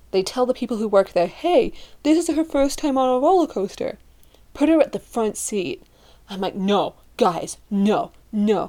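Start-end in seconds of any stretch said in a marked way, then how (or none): 6.5-8.6 mock frightened, very slow, scared delivery. Retelling friends seating her in a roller coaster's front seat: retelling a scared protest. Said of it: "scared first-timer protests front seat".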